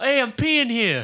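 put-on Boston accent. Retelling what a boston guy said while peeing, in a put-on boston accent. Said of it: "The Boston guys He's just like".

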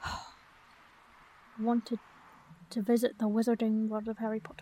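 muttering under breath. Admitting an embarrassing reason for travelling, then asked to repeat: mumbling under breath. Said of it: "I didn't quite catch that".

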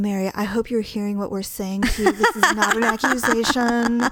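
mimicking soft, mock-condescending, patronizing voice. Retelling how a woman talks down to someone, mimicking her soft, patronizing voice. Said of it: "she's talking in her soft, patronizing voice".

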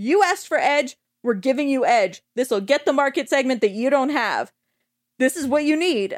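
put-on heated, angry, insistent, pushy delivery. Retelling Keanu answering a hot dog company that turned him down: mock-angry Keanu pitch. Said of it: "Keanu starts to get real angry".

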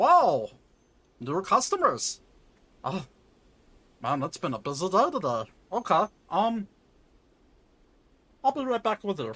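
put-on frogman creature voice. Narrator voicing a shopkeeper as new customers walk in, frogman voice. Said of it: "It's a frogman".

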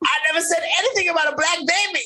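trembling quaver, very high. Repeating favorite lines of a reality show star: shaky Kandi voice. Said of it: "[name] loves his shaky voice candy".

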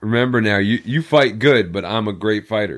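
ordinary talk, nothing marked

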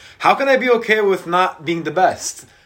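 loud voice, pitch rising. Explaining why being okay with failing is unacceptable to them: raised voice. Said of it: "you just raised your voice when you said it".

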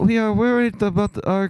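poor fake British accent. Imagining the Queen giving a state address: bad British accent as the Queen. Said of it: "or whatever British accent".

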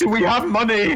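very high, blubbering, tearful crying whimper. Retelling a comic scene where Peter hugs someone, mock crying as Peter. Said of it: "Peter's just hugging him and crying".

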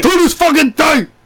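screaming. Repeating a catchphrase after the other speaker: screaming into the mic. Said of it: "trying not to fucking scream into the mic".

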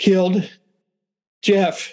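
breathless, panting speech. Retelling a sister telling Mom what happened: imitating someone out of breath. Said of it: "she's out of breath".

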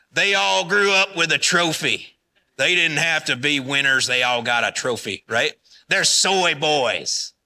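slow, exaggerated Southern accent. Speaker to an audience voicing older people's gripes about millennials, imitating a southern accent. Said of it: "I'm using that Southern accent".

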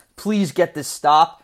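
put-on whisper. Retelling how another guy whispered while the Dolphins were on offense: imitating a whisper. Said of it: "He whispers under his breath".

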